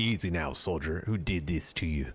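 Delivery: put-on stock buccaneer pirate voice. Voicing a captain addressing a soldier: pirate voice. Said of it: "Why am I doing pirate voice on them?".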